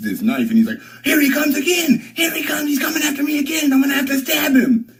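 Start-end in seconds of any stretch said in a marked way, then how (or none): 1.0-4.8 acted-out shrill, very high-pitched scream. Retelling someone screaming while holding a knife: imitating someone screaming. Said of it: "He's screaming the whole time".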